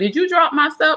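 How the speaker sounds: play-acted, high, accusing tone. Retelling the oldest daughter asking about her stuff: imitating an accusing tone. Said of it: "the way she said it was like I stole her money".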